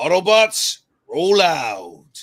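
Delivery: loud voice, the word "out" stretched long. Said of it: "a good Optimus voice".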